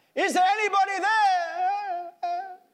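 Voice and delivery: very high, loud, drawn-out shout into the distance. In a story, a man holding on for life prays to God: shouting louder.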